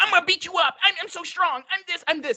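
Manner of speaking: very high, yapping, boastful tone. Mocking a rival by imitating his boasting: mocking Brian Callen as a yapping dog. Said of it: "like a, that kid, that, like, yapping dog that's like".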